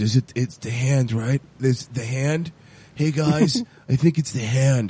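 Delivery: really low voice, kept way down. Imitating a show character who keeps blaming the hand, talking really low. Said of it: "he's talking really low".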